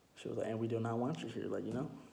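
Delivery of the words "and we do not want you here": normal talking voice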